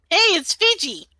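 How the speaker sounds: very high loud voice. Calling a friend on a magic phone: loud into the phone. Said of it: "that was louder than I thought".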